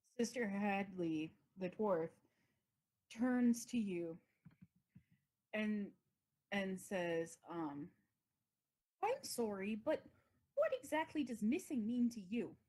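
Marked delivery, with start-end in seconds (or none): 9.0-12.5 put-on swooping accent roaming toward Minnesota. Game master voicing the dwarf Sister Hadley as she turns to a player: wandering accent. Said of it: "this accent is all over".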